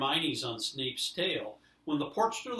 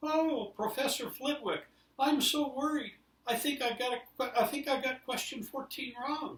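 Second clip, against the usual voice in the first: very high, teasing, mocking put-on falsetto; 11 semitones higher than usual. Narrator reads one character mocking another in a put-on high voice. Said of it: "he put on a high voice".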